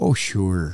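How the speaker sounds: put-on nonchalant, casual Wisconsin drawl. Imitating a veteran's offhand answer about fixing machine guns: imitating Wisconsin nonchalance. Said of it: "with such, like, Wisconsin nonchalantness".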